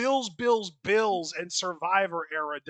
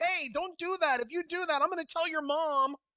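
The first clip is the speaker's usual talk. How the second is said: very high, whining, pushover victim voice; 11 semitones higher than usual. Describing a bully threatening a victim, voicing the victim: put-on whiny victim voice. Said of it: "when you put on those voices".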